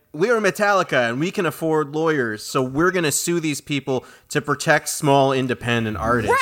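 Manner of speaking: normal talking voice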